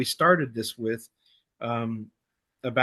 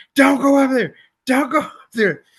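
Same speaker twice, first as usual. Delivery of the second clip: frantic, very high, loud shriek; 12 semitones higher, 8 dB louder than usual. Recounting yelling at a movie while watching it, retelling a scream. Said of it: "I'm like screaming at the top of my lungs".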